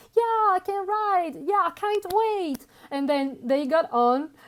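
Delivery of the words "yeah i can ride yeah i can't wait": high, giddy, super happy, thrilled excitement. Retelling what kids said before a ride: imitating super happy kids. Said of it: "super happy".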